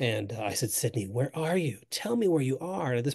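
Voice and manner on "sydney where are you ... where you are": play-acted, tearful, high-pitched voice. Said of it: "I'm in tears too".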